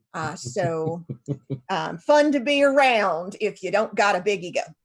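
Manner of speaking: slightly rusty, put-on Appalachian accent. Speaker deciding on the spot to use an accent not used for a while, Appalachian accent. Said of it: "use my Appalachian accent".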